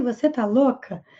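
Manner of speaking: plain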